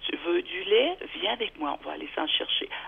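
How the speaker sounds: very calm, soft tone of voice.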